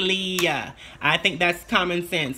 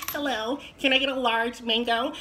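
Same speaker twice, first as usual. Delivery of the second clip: higher, feminine voice with a bossy tone; 5 semitones higher than usual. Giving voice tips, imitating how the speaker's sister orders food in a feminine ordering voice. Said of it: "That's how my sister orders her food".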